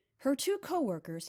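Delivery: plain reading voice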